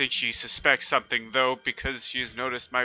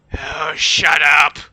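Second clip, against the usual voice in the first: loud, snappish retort; 3 semitones higher, 7 dB louder than usual. Voicing Maggie answering a complaint from the fort: snapping back. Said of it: "the voice of Maggie saying".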